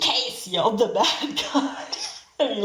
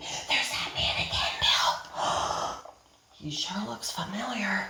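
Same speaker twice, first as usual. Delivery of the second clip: hushed whisper, quieter; 8 dB quieter than usual. Reading a story aloud, redoing a character's whispered line: whispering. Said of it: "sorry, he whispered it".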